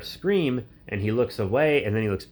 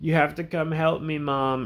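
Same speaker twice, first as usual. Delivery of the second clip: put-on tearful crying breakdown, higher pitch; 6 semitones higher than usual. Retelling a film scene where a character breaks down: imitating someone breaking down crying. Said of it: "breaking down crying".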